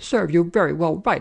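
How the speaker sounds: high, cross, furious scolding. An angry woman scolds someone who nearly got caught, angry scolding. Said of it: "scolded the angry woman".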